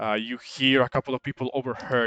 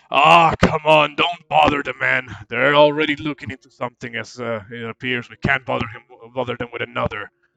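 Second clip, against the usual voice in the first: booming dwarf character voice; 6 dB louder than usual. Voicing another dwarf telling his friend not to bother them: dwarf voice. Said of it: "one of them kinda looks over at the one".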